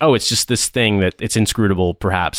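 usual speaking voice

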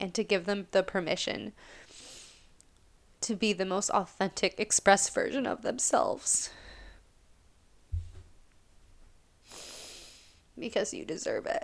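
tearful speech, crying while talking. Speaking to listeners about clients, crying while talking. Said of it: "I didn't mean to cry".

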